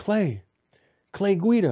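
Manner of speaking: very high, loud yell. Retelling rolling down the car window to call out a name, retelling a yell. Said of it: "I yelled out".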